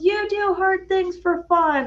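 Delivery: mock piercing, very high-pitched, shrill scream. Retelling a supporter screaming from the sidelines: imitating someone screaming. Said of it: "I hear Amanda just scream".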